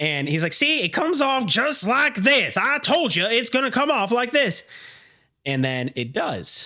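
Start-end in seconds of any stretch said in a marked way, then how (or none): 0.5-4.6 put-on old, pitched-up backwoods country bumpkin voice. Retelling what a worker said while prying something off: imitating an old country bumpkin. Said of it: "the old country bumpkin is still trying his best".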